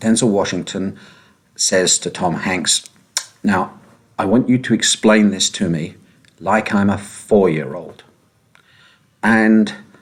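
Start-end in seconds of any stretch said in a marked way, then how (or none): none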